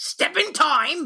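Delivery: very high, evil, little cockney goblin voice. Demonstrating the classic goblin voice: evil little high-pitched cockney voice. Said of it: "Evil little high-pitched cockney voice".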